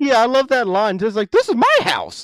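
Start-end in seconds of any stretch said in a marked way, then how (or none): 1.3-2.2 put-on, pitched-up, affronted, indignant protest. Quoting a favorite movie line, imitating indignation. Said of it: "she's indignant about it".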